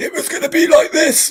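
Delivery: high, loud villainous voice. Explaining how his character voice first sounded, in a Baron Greenback voice. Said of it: "Baron Greenback from Danger Mouse".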